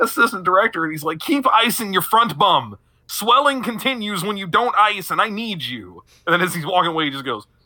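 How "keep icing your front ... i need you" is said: high-pitched yelling voice. Retelling him yelling at a hurt assistant director: imitating someone yelling. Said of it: "him yelling at this kid".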